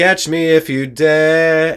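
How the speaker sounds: very slow, drawn-out delivery.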